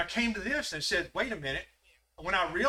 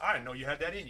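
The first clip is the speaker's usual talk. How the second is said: put-on smug, arrogant, sarcastic put-down tone; 3 semitones lower, 4 dB quieter than usual. Retelling what your uncle said to you across the table, imitating an arrogant, sarcastic uncle. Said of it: "Just arrogant, sarcastic, the way he came out".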